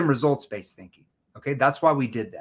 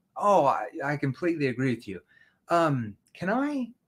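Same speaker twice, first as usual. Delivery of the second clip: soft, lowered, sympathetic, understanding tone; 3 dB quieter than usual. Demonstrating how to answer a price concern with empathy: lowered empathetic tone. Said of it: "Empathy. See my tone, how it lowers?".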